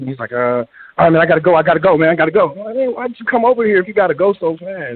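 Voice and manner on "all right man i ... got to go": hasty, rushed, hurried delivery. Imitating a friend hurrying to leave: imitating a rushing friend. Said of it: "so he's kinda rushing".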